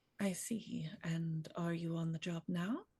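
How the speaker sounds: quiet, slow, unhurried voice, not a whisper. Sitting beside someone in character, asking if they are working: speaking quietly, not whispering. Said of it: "just quietly, not whispering, but quietly says".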